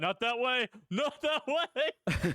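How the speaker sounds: silly high impression with laugh.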